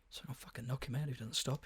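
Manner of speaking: put-on muttering under breath. Retelling what one of the guys in the house said, muttered under his breath. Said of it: "He said under his breath".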